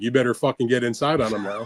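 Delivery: mock grave, firm, stern, controlled tone. Retelling a trainer's corner instruction to his fighter: imitating a stern, not too loud warning. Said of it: "very sternly, without getting too loud".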